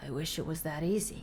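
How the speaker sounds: low, quiet, leaned-in voice, said up close. Leaning in to answer the other player, in a low voice. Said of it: "He leans in and says in a low voice".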